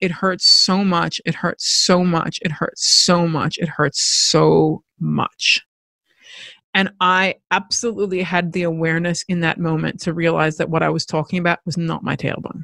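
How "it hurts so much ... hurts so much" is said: ordinary talk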